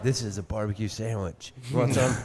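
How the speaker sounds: put-on whisper. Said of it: "they're whispering for some reason".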